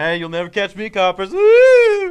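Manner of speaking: high, booming, slow cartoon-villain voice, stretched "woo". Mocking a movie villain prancing around: Scooby-Doo villain taunt. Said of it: "Like he's in a fucking Scooby-Doo movie".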